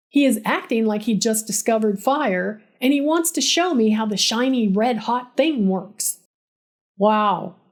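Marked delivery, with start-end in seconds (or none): 7.0-7.5 dead flat, deeply sarcastic voice. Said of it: "in the flattest, most sarcastic voice".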